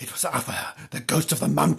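soft, hushed whisper, barely voiced. Still holding the narrator's arm, she tells him who did it, whispered. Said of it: "she whispered".

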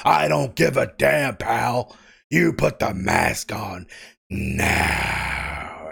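bad, rough, creaky, scraped-out put-on voice. Acting out a scene about a mask, the speaker does a bad Vince impersonation. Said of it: "I'm still terrible at the Vince impersonation".

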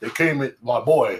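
put-on slow, old, working-man construction-worker voice. Retelling what a coworker said: imitating an old construction worker. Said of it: "he talks like, uh, like an old construction worker".

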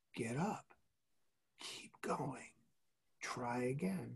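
soft, unvoiced whisper.

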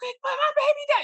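shrill scream pitched very high. A parent retells screaming as someone pulls her kid away: retelling a scream. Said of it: "I'm screaming like".

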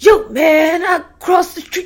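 high-pitched put-on caricature. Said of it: "I'm gonna try to attempt the voice".

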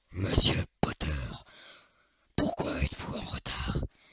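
hushed whisper, mostly breath, breath-heavy delivery. Narrating a Harry Potter scene, giving Snape's line in Snape voice. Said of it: "quand je vais faire cette voix, ça va être Rogue".

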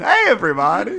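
cartoon character voice. As a final joke, greeting everybody in Dr. Nick voice. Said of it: "I'm going to do an impression of the Dr. Nick from The Simpsons".

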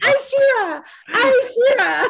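put-on very high, drawn-out, shrieking child's scream. Retelling jumping off the couch as a child: imitating a child screaming. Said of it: "just screaming".

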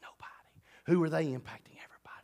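soft, unvoiced whisper.

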